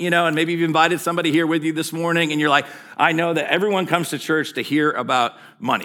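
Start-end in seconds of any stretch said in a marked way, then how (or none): none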